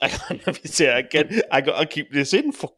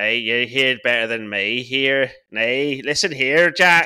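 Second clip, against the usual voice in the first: put-on Northern Irish accent; 4 semitones lower than usual. Showing the accents done around the house, a put-on Northern Irish accent. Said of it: "Northern Ireland".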